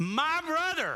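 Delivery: heavy stress on my in my brother. Analyzing where the emphasis falls in a statement: stress on my in my brother. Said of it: "my is the emphasis".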